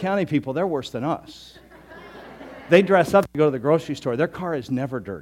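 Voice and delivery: gently ribbing, light teasing tone. Talking to an audience member about County people: teasing a little. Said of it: "so I'm teasing her a little bit".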